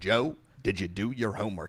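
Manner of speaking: sports announcer style. Acting out someone's dad coming home from work, Jack Buck voice. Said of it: "Jack Buck is your dad with that voice".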